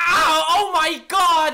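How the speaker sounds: screaming, high and loud.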